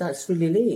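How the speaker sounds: usual speaking voice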